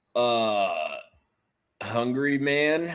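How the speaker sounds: drawn-out, moaned delivery. Answering a question about a TV dinner brand, like a Jeopardy contestant moaning an answer. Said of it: "You sounded like a Jeopardy contestant".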